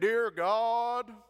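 big, loud announcer voice, "God" stretched out. Retelling how a man began his prayer to end a service, in a huge announcer voice. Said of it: "he had this huge, just announcer voice".

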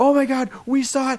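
mock loud children's yell. Retelling kids barging into an office: imitating kids yelling. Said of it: "yelling at the top of their lungs".

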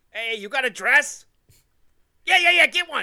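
acted Boston local voice. Imitating some guy in Boston talking to a friend: imitating a guy in Boston. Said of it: "some guy in Boston going like".

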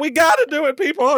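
acted, weepy, high voice through tears. Retelling an earlier moment of urging people on: imitating own past crying. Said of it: "And I'm crying".

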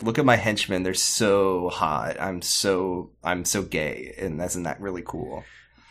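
low, slow, unhurried villain drawl. Retelling a TV scene where the villain shows up: mocking Moriarty impression. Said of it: "he has, like, Sherlock at gunpoint, and he's like".

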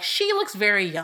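ordinary delivery

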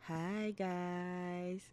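very quiet, hushed, soft, sultry sexy voice. Asked to give a hi to the listeners, the speaker redoes it: sexy voice. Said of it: "let me use my sexy voice".

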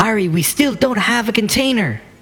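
high-pitched, yelled shout. Voicing a character in a tabletop game calling out to ari; shouting. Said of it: "And she shouts".

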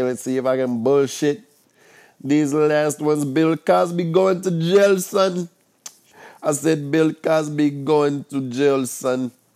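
goofy put-on Jamaican accent. Filling the last few minutes of the show, talking in a fake Jamaican-ish accent. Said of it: "I don't know what kind of accent this is. It's kind of like a Jamaican".

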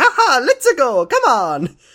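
very high, very slow, swooping sing-song, every word stretched. Retelling how someone greets the morning, doing a Mario voice. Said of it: "Mario voice".

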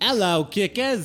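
high-pitched, slow, put-on British accent.

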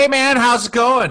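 loud screaming straight into the microphone. A guest greets the host on a live show, screaming into the microphone. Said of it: "you are really screaming into that microphone".

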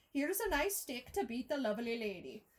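put-on, attempted old-film style Irish accent. Asked for an irish accent, speaker tries a film quote in an irish accent. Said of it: "try to get into an Irish accent".

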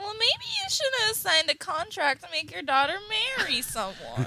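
sarcastic, high, sing-song mocking voice. Throwing a man's words back at him, mocking imitation of him. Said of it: "I think that she was mocking him".

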